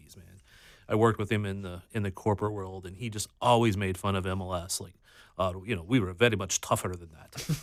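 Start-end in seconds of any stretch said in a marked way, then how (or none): 5.8-7.5 bad put-on Greek accent. Retelling an old coworker mocking MLS, in a terrible Greek accent. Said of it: "that was a terrible Greek accent".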